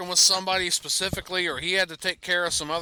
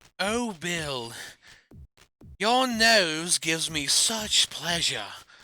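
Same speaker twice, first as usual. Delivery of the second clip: put-on English accent, swooning. Retelling how she would talk to bill on the microphone, imitating her english accent. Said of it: "she would do this shit in an English accent".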